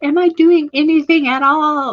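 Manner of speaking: frustrated, self-doubting voice.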